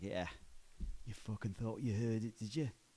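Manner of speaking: slipping into a put-on London Cockney accent. Retelling a reply to people who thought they heard London in the accent: slipping into Cockney accent. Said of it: "There you go again".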